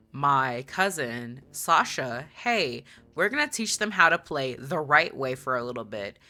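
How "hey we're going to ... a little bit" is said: plain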